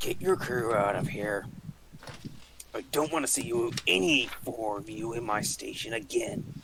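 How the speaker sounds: slow, furious, grumbling dwarf voice. Voicing a dwarf ordering the crew out of his station: angry dwarf voice. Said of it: "Angry little man".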